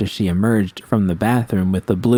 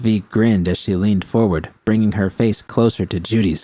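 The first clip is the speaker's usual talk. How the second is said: ordinary delivery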